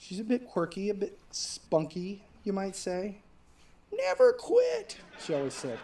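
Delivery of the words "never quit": put-on shrill, very high, botched old-lady voice. Talking about the speaker's grandma, bad impression of grandma. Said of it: "that is the worst impression of my grandma".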